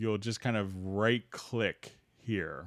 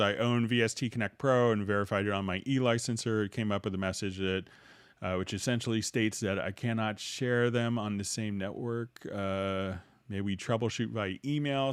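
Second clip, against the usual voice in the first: ordinary talk, nothing marked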